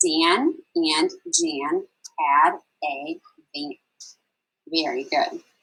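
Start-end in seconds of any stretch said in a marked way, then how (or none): 0.0-3.7 very slow, high, each word said separately. Stamping a star on each word, the speaker reads a sentence word by word. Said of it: "stamp it with some stars as we read each word".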